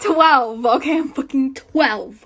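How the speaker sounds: trembling with rage. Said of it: "I'm also shaking because of how mad I am".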